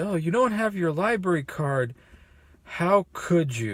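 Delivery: playful, gently ribbing, lightly chiding tone. Retelling own earlier words to someone: imitating own playful teasing. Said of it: "a little bit of the teasing, a little playfulness there".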